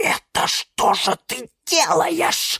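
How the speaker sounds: whispered shout, high and slow. Narrating one character scolding another without waking someone, whispered shout. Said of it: "закричал на нее Лимон Филимон шепотом".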